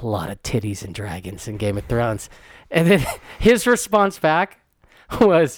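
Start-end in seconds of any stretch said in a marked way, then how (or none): 0.0-2.3 quiet, low half-whispered voice. Speaker retells telling Jack about Game of Thrones; retelling a half-whisper. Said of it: "I whispered to him".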